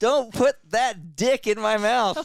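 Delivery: put-on very high, loud small child's voice. Retelling a small child refusing the tongue depressor: imitating River as a small child. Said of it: "'Cause he couldn't say S T".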